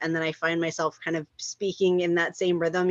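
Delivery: plain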